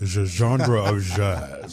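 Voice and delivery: very slow, French-sounding pronunciation. Speaker repeats a phrase to show how they said it, French-sounding pronunciation. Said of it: "Are you French?".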